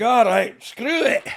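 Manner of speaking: put-on loud, high Scottish accent. Retelling what Finlay said about sending her out: Scottish accent as Finlay. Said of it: "Any excuse to get your Scottish accent on".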